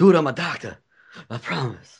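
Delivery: put-on breathless voice. Imitating a man nobody would believe: imitating someone breathless. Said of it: "He's all breathless and sweaty".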